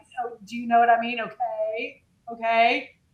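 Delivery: play-acted patronizing, superior, condescending talking-down tone. Retelling how a date talked to her: imitating a condescending tone. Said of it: "very condescending".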